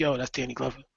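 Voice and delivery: very quiet, hushed half-whisper. Imagining telling kids who is on stage: acting out a half-whisper. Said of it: "you're gonna have to whisper to your kids".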